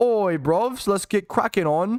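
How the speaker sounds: laddish put-on British accent. Asked to react to a clip in a British accent. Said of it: "I've been asked to read to react to this clip in a British accent".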